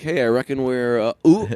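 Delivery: put-on southern drawl. Showing how you pick up the accent two days into a trip south: put-on southern accent. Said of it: "You go down south and then like two days in".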